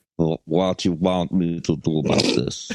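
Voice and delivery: clumsy, bad put-on Russian accent. Acting out a Russian cop shrugging off a report: bad Russian accent. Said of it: "I can't do Russian".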